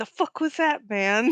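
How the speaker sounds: grumbled delivery. Speaking in character to a companion after someone walks away: muttering under the breath. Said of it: "under my breath".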